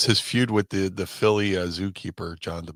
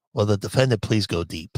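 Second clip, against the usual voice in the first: calling out. Retelling a radio bit where a judge speaks: imitating Judge Ito. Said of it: "Billy West, as Judge Ito, goes".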